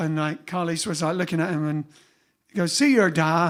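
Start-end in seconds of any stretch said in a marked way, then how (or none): 2.7-3.5 rough put-on Northern Irish accent. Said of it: "I can't do the accent properly".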